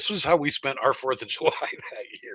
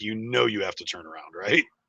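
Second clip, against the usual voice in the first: speaking through laughter; 3 semitones lower than usual. Retelling what a Mountie at the border checkpoint said: imitating a Mountie laughing while talking. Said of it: "he just starts laughing".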